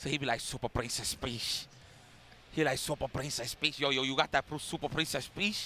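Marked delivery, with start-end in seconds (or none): 3.8-5.7 put-on heavy Dominican accent. Imitating how a man talks, in a heavy Dominican accent. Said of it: "he got that that that that heavy Dominican accent".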